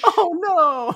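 very high, very loud belted cry. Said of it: "see if any of the guys you shoot sound like Mario".

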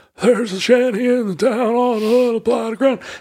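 put-on thin, aged old man voice, pitched high. Describing the voice his father used on a recording, old man voice. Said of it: "you did old man voice".

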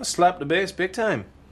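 attempted reggae voice. Telling a listener about playing bass, attempted reggae accent. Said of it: "You sound like a leprechaun".

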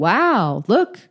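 heavy, mocking sarcasm with sing-song swoops. Recapping a show, quoting one character needling another: retelling a sarcastic remark. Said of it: "he's real sarcastic with Reed".

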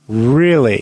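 dryly flat, deadpan delivery. [name] replies to Schmidt's complaint; dry.

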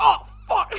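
high, loud puppet-voice outburst, blurted out.

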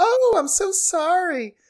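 sarcastic, mocking, very high and drawn-out. Retelling a scene after a slap: imitating Kay's mocking apology. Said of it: "her sort of, like, mocking apology".

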